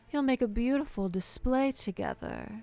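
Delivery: high, gloating, cruel, menacing villain voice. Running a game, voicing the foe as she smiles and taunts the players: smiling villain taunt. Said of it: "blood in her teeth as she smiles at you".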